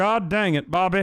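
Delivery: breathy put-on Texas drawl. Trying a voice that others said should be more breathy; breathy Texas drawl. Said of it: "Is that breathy for you?".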